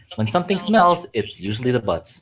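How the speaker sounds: ordinary talk, nothing marked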